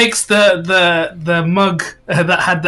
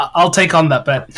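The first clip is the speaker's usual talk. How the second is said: ordinary delivery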